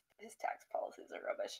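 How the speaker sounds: soft, whispered under the breath.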